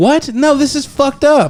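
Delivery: put-on very high, slow fifteen-year-old girl voice. Retelling what a movie character said: imitating a fifteen-year-old girl. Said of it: "Or was that a good impression?".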